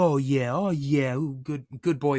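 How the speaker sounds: put-on high, slow voice with Texas accent. Retelling a man talking friendly with everybody, in a high-pitched Texas accent. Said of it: "kind of like high pitched, but still that Texas accent".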